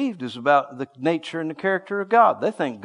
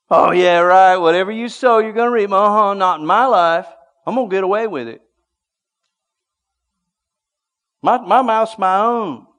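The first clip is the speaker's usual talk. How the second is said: put-on mocking scoff, higher and louder; 4 semitones higher, 7 dB louder than usual. Acting out people who mock god's law of sowing: imitating a mocking scoffer. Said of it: "And you're mocking God".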